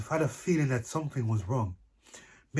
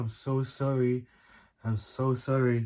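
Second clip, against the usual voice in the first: slow, somber, apologetic tone. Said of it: "It was like a very somber mood".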